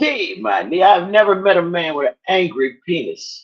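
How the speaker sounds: plain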